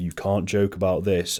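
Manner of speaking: ordinary delivery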